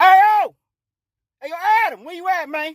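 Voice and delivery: high, loud call projected far.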